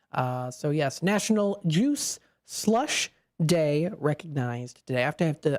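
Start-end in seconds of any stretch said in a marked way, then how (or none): 1.0-3.9 slow, careful pace. Announcing today's observance, careful not to get tongue-tied: said slowly. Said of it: "I have to say that a little slow".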